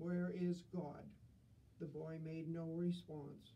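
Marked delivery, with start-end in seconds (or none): 0.0-1.0 stern, strict, severe tone. Reading a clergyman questioning an 8-year-old boy he has sat down, stern. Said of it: "asked him sternly".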